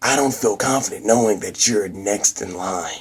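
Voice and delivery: gruff grunting put-on voice. Retelling a scene, voicing Norman Osborn asking his son about college: grunty Norman Osborn voice. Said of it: "grunty voice".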